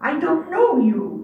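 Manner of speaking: play-acted severe, unbending, stern and firm delivery. Recounting a man's answer to a woman at his door, retelling a stern reply. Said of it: "he told her in a stern voice".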